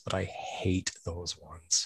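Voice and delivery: very quiet voice. Admitting a dislike of some classroom activities: said really quietly. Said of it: "I'm gonna say this really quietly".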